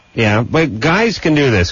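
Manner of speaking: ordinary talk, nothing marked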